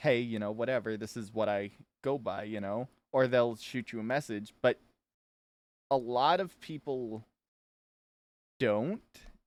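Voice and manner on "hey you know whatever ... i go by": ordinary talk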